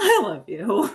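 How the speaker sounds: put-on loud, cracking voice like a fifteen-year-old boy. Retelling a moment of saying I love you: voice cracking. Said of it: "I'm going to do my best impression of him. ... my voice cracked like I was a fifteen year old boy".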